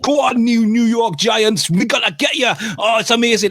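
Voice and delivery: put-on very high, unhinged, frenzied rant in a Geordie accent. Imitating an NFL fan ranting in a snack helmet: Geordie accent. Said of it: "he's got a Geordie accent".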